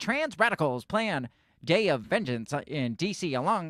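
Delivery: slow, deliberate, read-out delivery. Reading a headline aloud in imitation: Ben Shapiro voice. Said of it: "I can't read that without uh, Ben Shapiro's voice".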